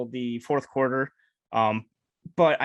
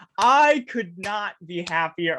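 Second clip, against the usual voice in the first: loud, drawn-out exclamation, volume rising; 4 semitones higher, 4 dB louder than usual. Previewing the Panthers versus Giants game, loud. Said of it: "I'm sorry if I got loud there".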